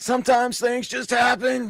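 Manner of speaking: mocking shout, pitched very high. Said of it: "was like".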